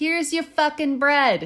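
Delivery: poor put-on Brooklyn accent. Acting out a no-chit-chat bread purchase, bad brooklyn accent. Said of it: "Is that your best Brooklyn accent?".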